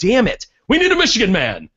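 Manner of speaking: put-on gruff football coach voice, swooping pitch. Retelling what the guy from Ohio said: Bo impression. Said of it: "said the guy from Ohio".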